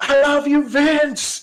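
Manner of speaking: very high, fierce, wrathful screaming. Narrator telling how a fan once yelled at a man, screaming.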